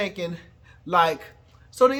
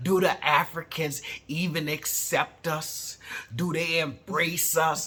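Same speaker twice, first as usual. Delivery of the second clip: put-on American regional dialect voice; 3 semitones lower, 6 dB quieter than usual.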